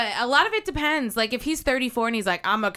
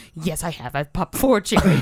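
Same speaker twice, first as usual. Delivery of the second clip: mock grave, earnest, low, dead-serious tone; 5 semitones lower, 4 dB louder than usual. Retelling a car ride, the speaker acts out his friend's reply, mock-serious. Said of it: "he gets real serious and goes".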